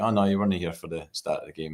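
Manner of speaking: ordinary delivery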